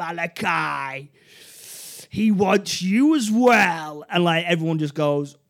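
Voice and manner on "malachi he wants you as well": slow, shouted demon voice. Describing a horned, bloodied figure, then its demonic shouting voice. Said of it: "we hear this demonic voice shout".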